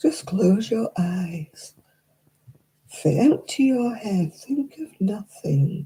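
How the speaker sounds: soothing, calming sleep-narrator audiobook voice. Mocking sleep audiobooks that tell listeners to relax: imitating a soothing audiobook voice. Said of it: "they had a soothing voice".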